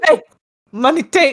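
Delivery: dim caveman voice, broken jumbled words. Joining in imitating a husband at the car lot: imitating James as a caveman. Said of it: "he was being a caveman that day".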